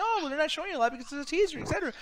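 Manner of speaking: high, fast, mocking singsong, rattled off.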